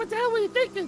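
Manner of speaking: mocking high-pitched whine.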